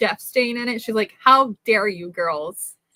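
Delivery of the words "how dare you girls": put-on slow, loud, livid older woman's voice. Retelling a grandmother's reaction to a ruined blanket: imitating a livid grandmother. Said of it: "my Southern grandmother was livid".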